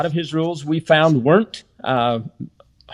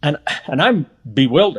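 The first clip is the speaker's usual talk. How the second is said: usual speaking voice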